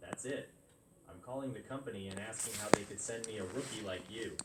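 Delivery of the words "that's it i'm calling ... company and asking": plain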